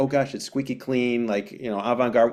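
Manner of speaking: ordinary delivery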